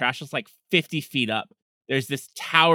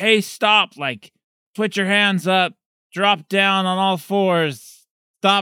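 loud, high-pitched shouting; 7 semitones higher, 5 dB louder than usual. Narrator voicing police chasing the fleeing players, shouting police orders. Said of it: "they're shouting like".

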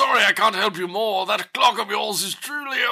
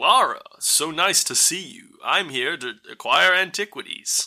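clumsy fake American accent, dropped low; 5 semitones lower than usual. Recapping a film, imitating Daniel Craig greeting Lara: Daniel Craig's bad American accent. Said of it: "with a pleasing American accent".

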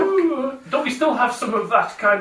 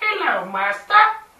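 put-on weasel character voice. Voicing a pet weasel greeting its owner: voicing a weasel. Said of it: "And Kodo goes".

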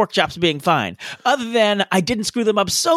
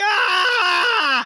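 very high, short, high-pitched yelp; 11 semitones higher than usual. Retelling ruined pork chops in a smoky kitchen: imitating own scream. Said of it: "I'm screaming".

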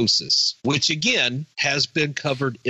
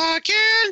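squeaky, very high cartoon voice. Reacting to news that Marvel may have killed off several heroes, Rocky the Flying Squirrel voice. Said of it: "I should get my Rocky the Flying Squirrel voice".

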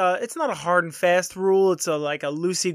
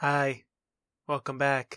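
creepy, eerie put-on voice; 5 semitones lower, 5 dB quieter than usual. Recording a radio show bumper, greeting the kids in Radio Land in a creepy detention voice. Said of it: "That is the creepiest detention voice".

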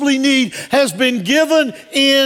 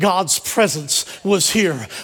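ordinary talk

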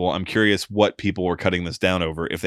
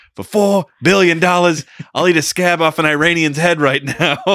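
shrill, loud, very high borrowed inflection; 10 semitones higher, 7 dB louder than usual. Talking about trying to get Conor McGregor to fight, Joey Diaz impression. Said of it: "I was trying to use my inflection like Joey Diaz".

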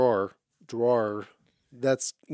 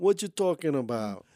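terrible put-on New York accent; 4 semitones higher than usual. Asked to do the accent again, trying a bad New York accent. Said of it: "Do it again".

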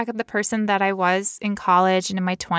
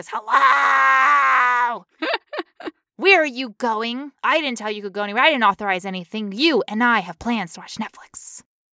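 energized, amped-up dragon character voice; 5 semitones higher than usual. Storyteller voices a dragon that slammed three Red Bulls, all hyped up. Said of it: "And he's all hyped up".

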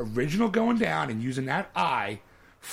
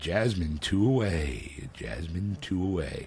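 hyped club announcer voice, lower; 9 semitones lower than usual. Showing how a strip club dj introduces the dancers: strip club dj voice. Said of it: "I would love to be a D J at a strip club".

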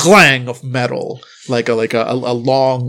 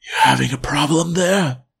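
hushed, soft, quiet voice; 2 semitones higher than usual. Narrator voicing the school janitor speaking from behind you in the dark, soft voice. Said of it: "a soft voice".

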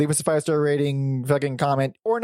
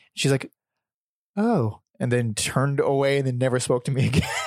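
ordinary delivery

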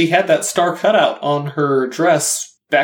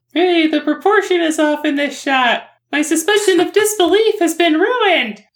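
put-on very high, squeaky little child's voice; 12 semitones higher than usual. Explaining he would have noticed animation errors as a child, in a kid impression voice. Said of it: "I like your impression of a kid".

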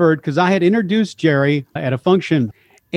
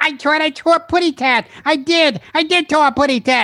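put-on high squeaky baby-bird voice; 10 semitones higher than usual. Running through cartoon impressions one after another: Tweety impression.

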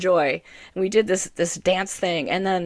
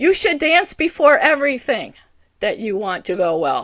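put-on loud bossy voice, higher, louder; 5 semitones higher, 5 dB louder than usual. Retelling guidance heard after dancing with friends: loud voice of God. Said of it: "it came in a loud voice".

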